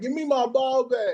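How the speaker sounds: high, calling yell. Telling how a man yelled at another from across the street, imitating someone yelling. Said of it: "he across the street yelling at him like".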